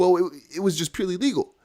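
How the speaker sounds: put-on high, stuttering, halting, babyish voice. Retelling an SEC woman answering a judge in court, imitating someone stuttering. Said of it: "keeps stuttering like a little baby".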